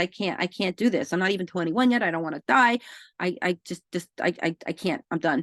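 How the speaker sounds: slow, acted-out mock sobbing. Recounting a phone call to dad from a freezing office, retelling sobbing. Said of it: "I was just sobbing".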